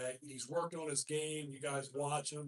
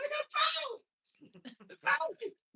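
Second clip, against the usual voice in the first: very high, loud, angry, drawn-out, swooping screech; 6 dB louder than usual. Retelling how a fouled player screeched from the floor: imitating a player screeching. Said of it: "he just kinda screeched at me".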